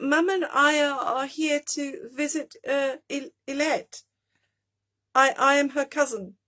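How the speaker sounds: trembling, shaky, nervous, stumbling voice. A narrator reads Lexi answering an adult on her visit, shaky voice. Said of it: "I answered in a shaky voice".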